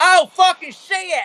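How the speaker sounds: very high hillbilly troll voice. Voicing a troll as it gets shocked to death: hillbilly troll voice. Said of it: "this hillbilly troll's like".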